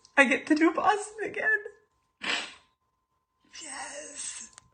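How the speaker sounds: overjoyed words through tears, happy crying. In a recorded video after being chosen for a free race bib, crying happy tears. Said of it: "These are happy tears".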